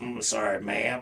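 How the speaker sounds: put-on silly voice, low and hushed. Retelling apologizing after a lady overheard him talking aloud, stuck in a put-on voice. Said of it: "I kept on talking like that".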